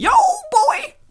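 high, loud yelping impression. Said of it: "That was my Wanda Sykes impersonation".

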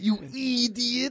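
bad cartoon voice, "idiot" drawn out. Player retries the line after the others ask which character: bad Ren impression. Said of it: "I don't do a good Ren".

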